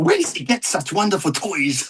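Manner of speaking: theatrical, high, swooping comic-villain voice, pitch swinging around. Dressed up and quoting lines as the Joker: Joker voice. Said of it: "are you just gonna quote all the fucking Joker?".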